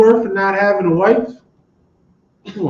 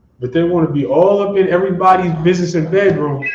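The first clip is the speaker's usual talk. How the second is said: ordinary talk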